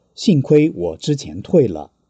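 normal talking voice

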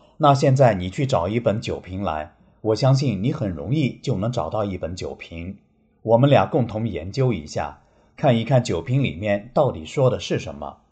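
plain

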